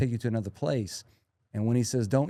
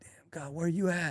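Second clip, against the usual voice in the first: acted, high, angry call, reined in; 6 semitones higher, 4 dB quieter than usual. Retelling yelling at God while mountain biking, re-enacting a top-of-lungs scream. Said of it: "Like screaming, like top of my lungs".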